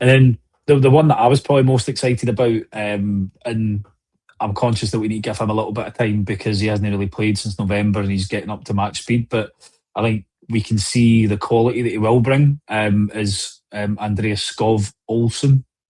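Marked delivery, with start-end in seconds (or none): 14.0-15.6 slow, careful, deliberate pace. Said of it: "I'll say that slowly".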